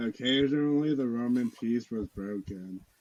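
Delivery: extremely unenthused voice. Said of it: "in the most unenthused voice ever".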